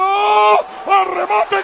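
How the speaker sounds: high, drawn-out, excited sports commentator call.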